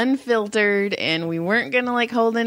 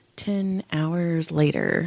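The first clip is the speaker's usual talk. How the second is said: put-on muttering under the breath, lower pitch; 5 semitones lower, 3 dB quieter than usual. Retelling what a waitress said about a coworker: imitating muttering under her breath. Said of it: "under her breath, she goes".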